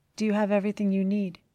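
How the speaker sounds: soft, quiet voice. He asks her as she prepares to leave the apartment, asking quietly. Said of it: "he asked quietly".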